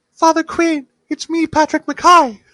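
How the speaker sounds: exaggerated, very high and loud, belted. Retelling how a killer greeted a priest: exaggerated high-pitched Patrick Mackay voice. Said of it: "like a higher pitched voice".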